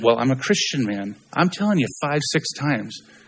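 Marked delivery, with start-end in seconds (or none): 0.0-1.2 put-on prim British accent. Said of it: "they speak the Queen's English".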